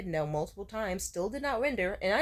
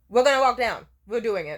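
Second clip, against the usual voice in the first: very loud, firm, forceful voice; 10 dB louder than usual. Retelling finally telling a hesitant friend they will walk down: imitating forceful insistence. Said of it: "full on fucking say".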